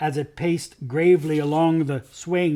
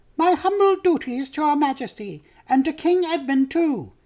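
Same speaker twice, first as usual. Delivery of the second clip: very high, shrill piping voice; 11 semitones higher than usual. The mouse Reepicheep greets Her Majesty after bowing: shrill, piping Reepicheep voice. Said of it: "in his shrill, piping voice".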